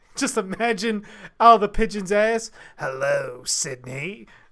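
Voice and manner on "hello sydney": very low, deep character voice. Imagining a message from a pigeon: Ghostface voice. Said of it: "a fucking Ghostface voice coming out of a pigeon".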